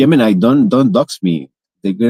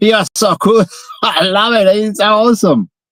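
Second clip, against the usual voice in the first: speaking through laughter, very high pitched; 11 semitones higher than usual. Testing a voice assistant's emotion detection, laughing while talking. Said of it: "I can detect that you just laughed".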